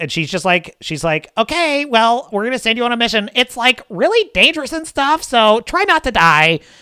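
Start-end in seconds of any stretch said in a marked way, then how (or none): 1.4-6.6 annoying, perky, high chirpy voice. Imitating a typical game NPC with an annoying perky voice. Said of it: "an annoying, perky voice".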